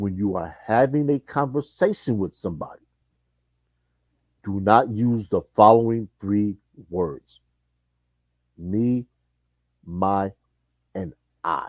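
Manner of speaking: very slow, deliberate, each word drawn out. Speaker passing on advice for women, saying it real slow so listeners understand. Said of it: "I'm going to say this real slow".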